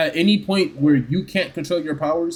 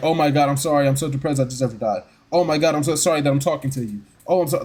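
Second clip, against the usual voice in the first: mock depressed, self-pitying, sorry tone. Retelling how an annoying character talks: imitating her depressed apologizing. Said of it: "'Cause then she's like".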